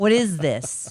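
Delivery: put-on disdainful tone. Acting out how a charge gets questioned: imitating a disdainful tone. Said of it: "With d-, disdain".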